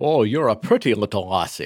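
put-on Scottish accent. Talking about impressions, the speaker attempts a Sean Connery impression. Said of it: "I don't even know if that was Scottish".

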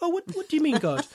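bewildered, puzzled tone, very high pitch. Acting out an alternative reading of a passage, mock-puzzled questioning toward god. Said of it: "they're really puzzled".

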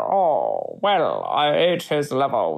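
deep, very slow, swooping drawl, every word stretched. Telling a co-host a movie casting fact in a Sean Connery impression. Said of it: "This is my Sean Connery".

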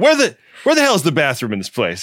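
huffy, irritated, swooping, exasperated tone. Retelling what a man who came in in a huff said: imitating a huffy man. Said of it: "A guy comes in in a huff".

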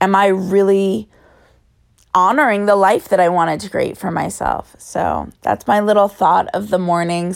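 talking through a scratchy, hoarse rasp. Sharing a morning thought to end the episode, raspy voice. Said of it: "Sorry for my raspy voice".

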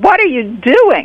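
high screeching voice. Retelling a story, the speaker imitates a woman suddenly screeching at them. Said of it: "she more or less screeches".

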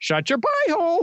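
shrill, very high, squawky parrot voice. Playing a parrot in a scene, the speaker uses a parrot voice. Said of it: "Very nice parrot voice".

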